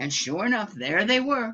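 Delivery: ordinary delivery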